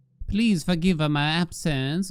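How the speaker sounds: put-on Italian accent. Reading a character's lines aloud, addressing the Signorina, in an Italian accent. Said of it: "I should not do the accent".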